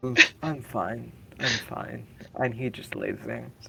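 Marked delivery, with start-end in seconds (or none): 0.0-2.1 put-on sloppy, slow drunken character voice. Voicing a drunk character lying on the floor after tumbling downstairs: drunk character voice. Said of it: "quote unquote, intoxicated".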